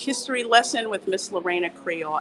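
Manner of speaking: ordinary delivery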